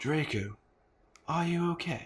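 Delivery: theatrical gothic-novel voice. Asked what a gothic voice is, demonstrating a put-on gothic voice. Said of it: "This is a gothic voice".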